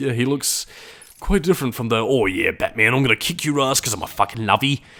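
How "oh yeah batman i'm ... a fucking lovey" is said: put-on tough, hard-edged British street chav accent. Describing a character taunting Batman, Nolan North's tough British chav voice. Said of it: "doing his best tough British on the streets chav kind of impression".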